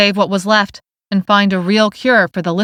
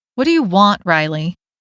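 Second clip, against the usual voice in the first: stern, deliberately unimpressed, bored put-on voice. Dessa answers Riley, putting on her best stern yet bored voice. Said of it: "in her best impression of a stern yet bored voice".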